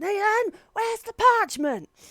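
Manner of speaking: very high, shrill, loud shout, polite voice dropped. Describing a woman turning from a customer to call her husband: retelling a shout. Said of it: "just shout ... In just like a completely different voice as the customer service one".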